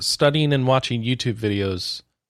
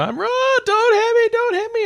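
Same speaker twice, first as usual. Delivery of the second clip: very high, shrill screaming. Retelling a teammate running from a monster while low on health: imitating Kelly screaming. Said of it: "just screaming into the microphone".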